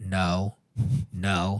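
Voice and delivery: very low, dead-level, flat monotone. A father showing how he answers his screaming son, flat monotone. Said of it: "have the same monotone".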